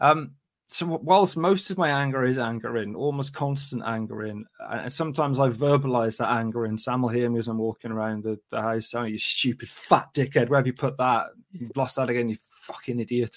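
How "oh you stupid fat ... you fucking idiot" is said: angry, annoyed self-scolding tone. Retelling muttering while walking around the house: imitating own angry self-talk. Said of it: "getting angry and annoyed at myself".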